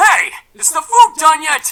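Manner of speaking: shrill, booming, very loud, high-pitched holler. Sam comes down in the morning and calls out about breakfast, yelling. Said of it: "There's no need to yell".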